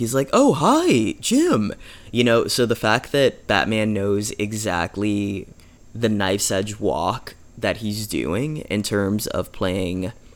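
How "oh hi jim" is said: very high, goofy, dopey airhead voice. Describing the different voices a performer uses, dopey Bruce Wayne voice. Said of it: "Bruce Wayne kind of sounds like a dope".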